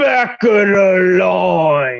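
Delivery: very slow grunting, words drawn out. Narrating the game, voicing the bouncer standing over a player: grunting bouncer voice. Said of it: "He just kind of looks at you and grunts and says".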